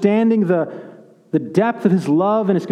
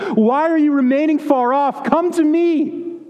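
put-on, high, earnest pleading call; 8 semitones higher than usual. Acting out a plea to weary listeners to come near: pleading as Jesus. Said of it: "he pleads with them and he says".

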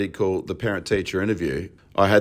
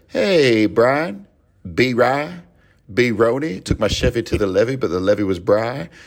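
put-on slow, drawn-out English baby accent; 3 semitones higher than usual. Retelling a Family Guy scene where Stewie acts cool with the dog Brian, Stewie voice. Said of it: "little baby with an English accent".

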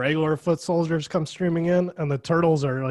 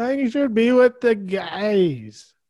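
put-on whiny, mad voice, higher and louder; 7 semitones higher, 5 dB louder than usual. Retelling a film scene, imitating a character who is whiny and mad. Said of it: "he's all mad and whiny about".

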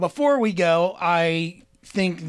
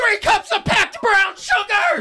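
very high, fake, put-on yell; 4 dB louder than usual. Joking about yelling recipes at an animal: pretend yelling a recipe. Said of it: "start yelling recipes at it".

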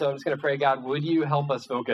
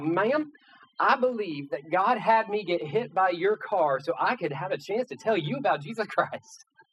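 put-on Southern accent, toned down, slow, high drawl; 5 semitones higher than usual. Retelling what a man hit by a car told her, put-on southern accent. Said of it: "like deep Southern accent kind of stuff, like way more Southern and happy than what I'm going to try to do for you".

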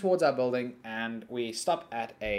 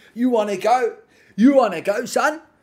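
put-on English accent, higher and louder; 11 semitones higher, 12 dB louder than usual. Retelling a homeless man's challenge to fight: imitating an English accent. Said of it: "'Cause he's from England all of a sudden".

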